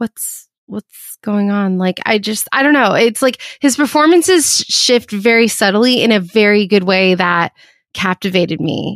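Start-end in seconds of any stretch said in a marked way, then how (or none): 0.0-1.8 odd, soft, hushed half-whisper. Describing an episode's repeat loop, imitating Geordi half-whispering weirdly. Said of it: "kind of whispering in a weird way".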